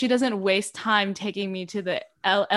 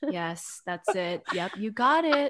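put-on calm voice. Remembering Quizlet study sessions, mimicking Lorena confirming answers: imitating Lorena's calm. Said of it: "Lorena is so calm and be like".

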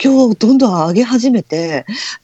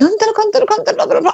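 put-on shrill, shrieking, very high old-lady voice; 11 semitones higher than usual. Retelling a scary moment, the speaker imitates a shrill, high old-woman voice. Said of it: "すっごいかんだかいおばあちゃんみたいな声で".

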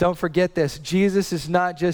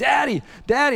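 mock passionate toddler voice, pleading tone; 8 semitones higher than usual. A father retells his 3-year-old daughter calling him while he worked, imitating a passionate 3-year-old. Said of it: "she's like very passionate".

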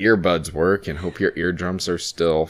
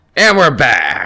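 full-on, very loud, high scream; 5 semitones higher, 9 dB louder than usual. Starting the podcast episode, screaming into the mic. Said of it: "You fucking just screamed".

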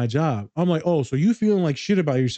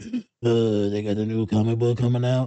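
put-on heavy panting, lower; 4 semitones lower than usual. Teasing a podcast co-host as a comic book nerd, the speaker imitates heavy breathing. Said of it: "breathing hard like".

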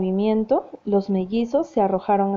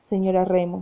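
ordinary delivery

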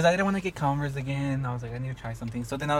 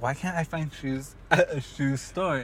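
plain

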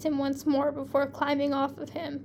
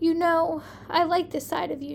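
ordinary delivery

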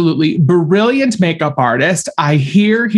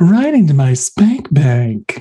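suggestive, sexy put-on voice. Repeating your own sexy comment, in a Samantha Jones voice. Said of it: "I did it in the Samantha Jones voice".

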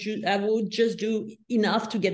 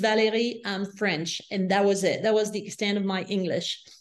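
ordinary talk

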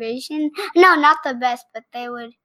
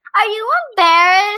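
called out with a raised, high-pitched voice; 9 semitones higher, 7 dB louder than usual. Repeating a question when asked to say it louder: louder. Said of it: "Say it louder".

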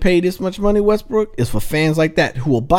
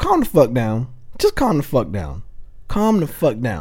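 deep, worn-out, fed-up dad voice; 5 semitones lower, 3 dB quieter than usual. Telling a player in the league to calm down, in a tired daddy voice. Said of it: "you said that in your daddy voice".

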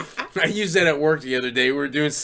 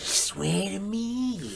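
creepy creature voice, higher and quieter; 6 semitones higher, 8 dB quieter than usual. Trading voice bits in conversation, doing a Smeagol voice. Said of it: "Or a fucking Smeagol".

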